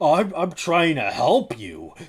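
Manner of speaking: defensive, slow delivery. Retelling how Doctor Phil reacts when called out: imitating Doctor Phil getting defensive. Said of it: "he gets super defensive".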